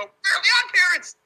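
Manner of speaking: shrill, very high, very loud cartoon shriek. Comparing someone's voice to the cartoon teacher, doing a Mr. Crocker impression. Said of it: "He sounds like the teacher, Mr. Crocker, when he would go".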